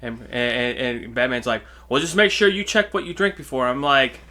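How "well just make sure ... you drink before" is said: play-acted patronizing, condescending, high-toned know-it-all tone. Retelling a scene from the sixties Batman show: condescending Batman voice. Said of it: "Batman has a fucking condescending thing".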